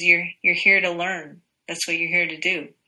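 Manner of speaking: normal talking voice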